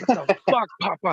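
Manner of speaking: piercing, very high, loud yell. Retelling what they yell at their dog all night: imitating own yelling. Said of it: "I'm always yelling".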